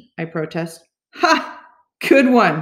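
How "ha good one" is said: said through a laugh, pitched up. Bear answers the narrator's protest, laughing. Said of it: "Bear laughs".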